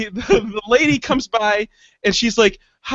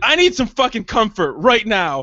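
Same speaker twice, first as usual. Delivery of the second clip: mock fed-up, fuming, furious flipped-out outburst. Retelling flipping out at the hostess: retelling own furious outburst. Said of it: "And I fucking flipped out".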